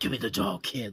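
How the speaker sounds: hushed, quiet, soft put-on voice under the breath. Retelling how he does an impression, say the line in a Clint Eastwood voice. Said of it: "does the Clint Eastwood voice going like".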